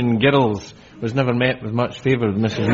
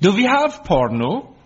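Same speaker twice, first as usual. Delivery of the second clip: put-on Danish accent, pitched up; 8 semitones higher than usual. Retelling what a new au pair said, in her best danish voice. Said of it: "said in her best Danish voice".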